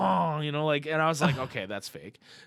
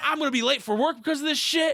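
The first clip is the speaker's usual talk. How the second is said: put-on enraged, shrill yelling, very high pitched; 10 semitones higher than usual. Retelling yelling at the drive-thru worker: imitating own angry yelling. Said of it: "So I was real mad".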